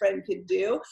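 ordinary talk, nothing marked

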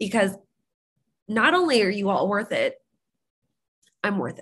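choked-up voice catching with emotion. Speaking to the group about the nine long days ahead, choking up. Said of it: "Sorry, I'm choking".

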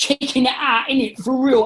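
put-on street gangster voice. Listing the characters you like doing, you give a quick example in an Ali G voice. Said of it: "I dress up as do Ali G".

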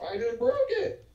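very high voice, breaking up and cracking. Reacting during a game with a friend, voice cracking. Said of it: "Voice crack".

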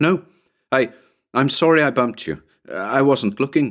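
high, frightened, forcing a smile. A narrator reads a frightened woman's reply to a man, forcing a smile. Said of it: "forced a pallid smile".

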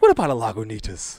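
the happiest, super cheery voice possible. Retelling a bar story, quoting a man who looks like the bartender: imitating a super-happy voice. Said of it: "And just the happiest voice".

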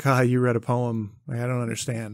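put-on chuckling through the words. Retelling another person's reaction: imitating someone chuckling. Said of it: "he kinda chuckled at me like".

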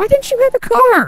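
shouting. Playing a game and waiting to kill an enemy, yelling. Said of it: "I didn't mean to yell".

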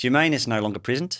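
put-on Kiwi-style New Zealand accent. Trying a line the way it could be done: put-on new zealand accent. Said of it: "You could also do it in a New Zealand accent".

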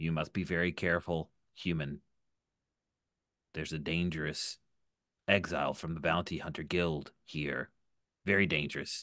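secretive, low, hushed stage half-whisper. A game master voices a droid leaning in to warn a human, half-whispering. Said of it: "and then it leans in to whisper".

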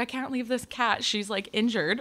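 ordinary talk, nothing marked

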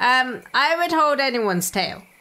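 plain

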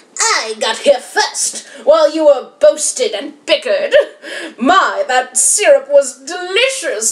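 sneering villain voice with snickering through it. Narrator reading a story as the villain speaks, sneering Baron Von Waffle voice. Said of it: "Licking his lips with a sneer that was awful, out of the shadow crept Baron Von Waffle".

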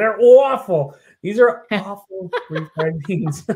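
Jersey-ish accent. Leaning into an accent that just slipped out, put-on Jersey-sounding accent. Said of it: "I got to incorporate the accent".

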